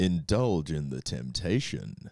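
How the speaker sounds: low, sultry, seductive commercial announcer voice. Auditioning a chocolate commercial line in sexiest voice: low sexy commercial voice. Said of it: "Too low? Too much?".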